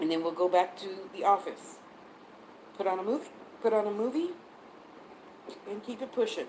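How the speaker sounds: speech interrupted by hiccups. Speaker describing their daily routine at home, talking through hiccups. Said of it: "I got hiccups now".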